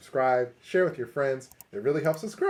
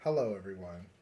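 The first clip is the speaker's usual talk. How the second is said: soft, low, hushed stage half-whisper; 5 semitones lower, 8 dB quieter than usual. Opening the first episode of a show, greeting everyone: half-whispering. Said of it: "I don't know why I'm whispering".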